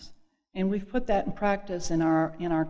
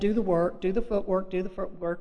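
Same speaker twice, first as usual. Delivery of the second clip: ordinary talk, nothing marked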